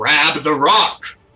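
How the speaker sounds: big, booming, loud, commanding bellow. Narrator voices a creature commanding the trolls, in a booming commanding voice. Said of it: "in its booming voice like commands the trolls".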